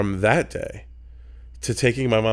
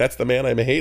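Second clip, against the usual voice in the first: normal talking voice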